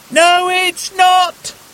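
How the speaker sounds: shrill, very high-pitched yell. Crossing a rushing river, he answers his companion over the roaring water; shouted. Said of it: "shouted [name]".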